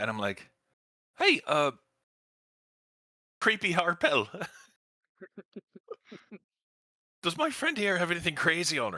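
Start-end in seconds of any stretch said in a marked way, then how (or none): 1.2-9.0 shouting, higher pitched. Playing a character yelling over at a hooded figure: yelling. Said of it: "I yell over at that hooded figure".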